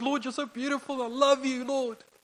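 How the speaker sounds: put-on weepy, tearful voice, very high-pitched. Retelling praying while driving with worship music on: imitating own tearful prayer. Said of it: "I'll get so emotional, I'm crying".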